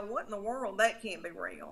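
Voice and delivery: plain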